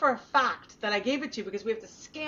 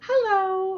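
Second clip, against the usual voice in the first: acted extra sweet voice, higher and louder; 8 semitones higher, 6 dB louder than usual. Retelling walking into the pharmacy: imitating own super nice voice. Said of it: "with my super nice self".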